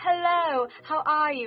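upper-class British accent. Speaker showing how to talk British, posh British accent. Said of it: "Talk like you're gonna go have tea with the Queen".

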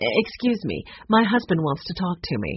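usual speaking voice

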